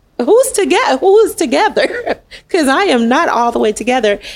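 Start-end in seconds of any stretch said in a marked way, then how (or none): 0.2-2.2 high, incredulous, disbelieving voice. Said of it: "'Cause I was like".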